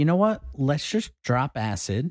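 ordinary delivery

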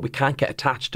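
ordinary talk

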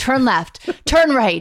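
loud, bossy, commanding sat-nav lady voice. Recalling a car ride, the speaker imitates the navigation app, imitating bossy Waze voice. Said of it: "the lady's voice was so bossy".

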